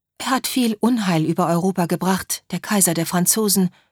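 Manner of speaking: ordinary delivery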